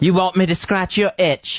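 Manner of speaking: fake, put-on British English accent. Answering in an improvised comic bit, English accent. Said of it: "English accents".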